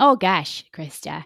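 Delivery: loud, exaggerated Minnesotan accent.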